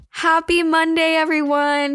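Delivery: eager, happy delivery. Podcast host greeting listeners on returning after a month-long hiatus, excited. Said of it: "Can you hear the excitement of my voice".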